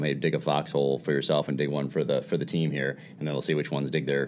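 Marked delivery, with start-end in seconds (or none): none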